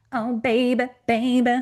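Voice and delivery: high, loud signature voice. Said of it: "I'm probably not doing a good imitation".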